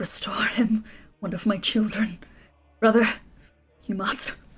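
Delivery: slight, faint voice sounding far off. Game master narrating a fight voices Corellin to a player, faint and distant. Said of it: "a slight voice off in the distance".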